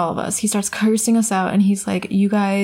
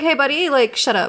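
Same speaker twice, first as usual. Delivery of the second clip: put-on, fed-up scolding yell, pitched up; 6 semitones higher than usual. Retelling yelling back at a threatening man: imitating own past yell. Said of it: "So I yelled at him too".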